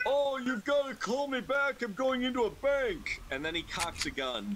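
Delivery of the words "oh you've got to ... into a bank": put-on, pitched-up elderly man voice. Retelling a roommate answering spam callers, in his best old man voice. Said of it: "He just puts on his best old man voice".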